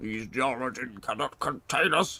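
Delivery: deep, big, ancient tree-creature voice. Quoting a game character's line, attempting a big tree voice. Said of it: "It's not quite a big tree voice".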